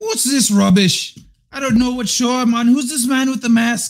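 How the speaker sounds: loud, high, bad Irish accent that sounds Scottish. Trying out an accent for a community poll, a terrible irish accent attempt.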